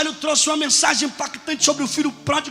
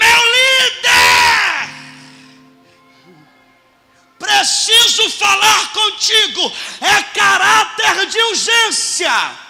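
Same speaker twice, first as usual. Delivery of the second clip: mock very slow, swooping, high, loud drawn-out shout; 6 semitones higher, 5 dB louder than usual. Retelling how a young man called out urgently: imitating someone shouting. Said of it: "me gritou".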